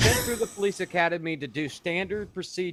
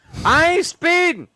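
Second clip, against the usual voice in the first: mock shouting, higher and louder; 10 semitones higher, 11 dB louder than usual. Joking about being pulled over, yelling out the car window: pretend yelling at police. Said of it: "I'm gonna yell at the window going".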